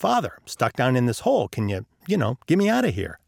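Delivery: plain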